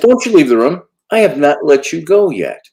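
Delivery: mock scolding tone. Recounting speaking to him when he turns away; retelling a raised voice. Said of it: "I have to talk to him in that voice".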